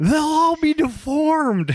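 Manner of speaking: very high, drawn-out, screaming woman's voice. Retelling a woman in a movie scene: imitating a woman screaming. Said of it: "the woman who just screams".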